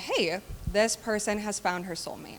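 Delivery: ordinary delivery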